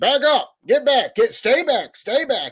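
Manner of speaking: high, loud yell. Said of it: "somebody is yelling".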